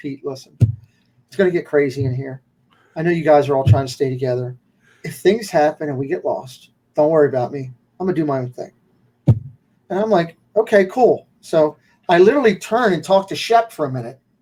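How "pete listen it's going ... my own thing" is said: soft, peaceful, quick, quiet mouse-like voice. Retelling Walt turning to him to speak, imitating Walt's quiet mouse voice. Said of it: "just in that mouse talk, peaceful voice".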